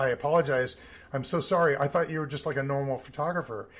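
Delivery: ordinary delivery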